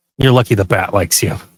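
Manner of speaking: low, half-whispered stage whisper. In a role-played scene, speaking to the chained man: half-whispering. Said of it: "I also kind of whisper to him".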